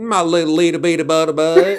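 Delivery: put-on rural Southern accent. Imitating a dog owner talking to her dog: imitating owner's Southern rural accent. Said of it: "Very Southern, very rural sounding".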